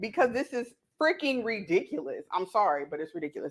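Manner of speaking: words broken up by laughter, laughing through them. Reacting to a news story while cooking, laughing while talking. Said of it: "I can't stop laughing".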